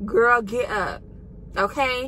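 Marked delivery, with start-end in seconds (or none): none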